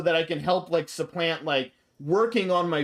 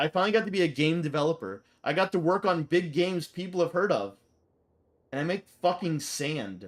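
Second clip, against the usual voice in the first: ordinary delivery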